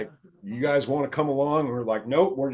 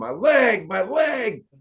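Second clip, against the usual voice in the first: put-on very slow, high, agonized, drawn-out howling scream; 7 semitones higher than usual. Speaker recounts a man whose leg the cops broke; imitating him screaming in pain. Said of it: "this guy starts screaming".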